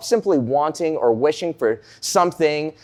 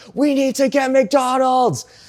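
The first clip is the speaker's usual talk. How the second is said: put-on, very high, drawn-out wailing scream; 10 semitones higher than usual. Retelling a car ride, imitating a little sister screaming: imitating sister screaming. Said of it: "she starts screaming at the top of her lungs".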